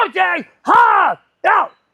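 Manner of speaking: shrill, loud, booming, high-pitched umpire-style shout. Retelling a softball game, imitating his dad making an umpire call. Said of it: "my dad's doing the umpire thing".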